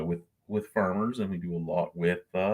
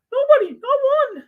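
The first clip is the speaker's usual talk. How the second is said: shrill, very loud, very high put-on voice; 11 dB louder than usual. Alone tonight, complaining that nobody joins him: high-pitched voice. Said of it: "That's my high pitched voice".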